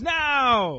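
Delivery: slow, loud, drawn-out rallying shout, held long. Shouting random hopeful things to the world: shouting. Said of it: "I just wanna shout random things".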